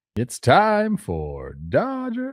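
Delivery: very slow, high, swooping, sing-song clumsy ballpark announcer. After being told you sound like him, ask for the standings in a bad Vin Scully impression. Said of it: "a bad Vin mm. Scully impersonation".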